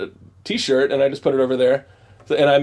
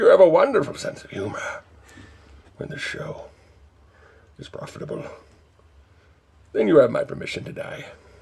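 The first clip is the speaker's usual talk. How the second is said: deep, breathy voice; 3 semitones higher, 4 dB quieter than usual. Answering a co-host's joke in character as a villain: deep Bane voice. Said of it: "God, deep".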